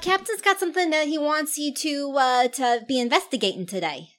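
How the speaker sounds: put-on perky, heavy Brooklyn accent. Playing the captain's relative passing on today's assignment, in a thick Brooklyn accent. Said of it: "obviously a thick brooklyn accent the best that i can do".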